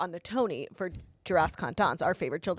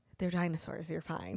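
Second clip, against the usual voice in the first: put-on, half-asleep, sleepy mumble, quieter; 7 dB quieter than usual. Retelling a partner's reply after being woken at night: imitating someone half asleep. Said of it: "He was, like, half asleep".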